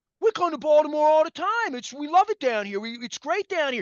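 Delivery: put-on loud, high-pitched, dumb-sounding Philadelphia accent. A guy with a Baltimore accent retells visitors talking to him, in a stupid Philly accent. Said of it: "in the Philly accent say to me".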